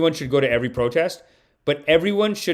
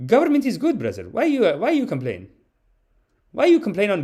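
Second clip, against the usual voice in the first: put-on Syrian-accented voice, much higher pitch; 7 semitones higher than usual. Retelling a sketch where one man urges another to fight back, as Khalid character voice. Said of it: "the character was always from like Syria".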